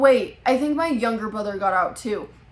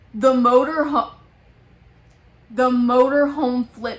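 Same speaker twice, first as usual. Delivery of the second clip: normal talking voice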